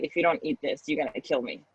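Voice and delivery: put-on weeping, tearful, crying, pleading voice. Retelling what a crying mother said in the bedroom: imitating a tearful mother. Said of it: "And she just started crying. She's like".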